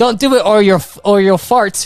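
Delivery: put-on yelled delivery. Narrating a scene as the character Kath calls out a warning: Kath yelling out. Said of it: "you hear Kath yell out".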